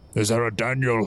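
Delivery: rough, very gruff voice. Narrator voicing a man who comes out of the front entrance: very gruff voice. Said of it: "with a very gruff voice".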